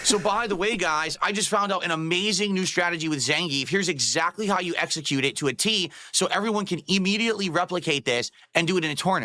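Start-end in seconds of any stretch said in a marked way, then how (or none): none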